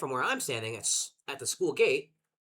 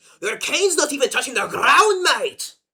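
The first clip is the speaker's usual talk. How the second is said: put-on Scottish accent, very high, very loud, shrill; 12 semitones higher, 12 dB louder than usual. Speaker quotes a Scottish stranger from a video, in a Scottish accent. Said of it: "That's how we get into the Scottish mood".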